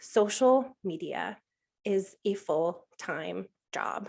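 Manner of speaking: very slow, drawn out, deliberate delivery. Giving a main takeaway of the talk, the speaker says it slowly. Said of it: "I'm going to say this slowly".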